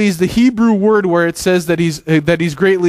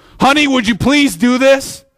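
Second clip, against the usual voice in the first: angry, pitched-up tone loaded with anger; 5 semitones higher than usual. A speaker shows how attitude changes the same sentence, angry tone. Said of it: "different attitude, different different anger".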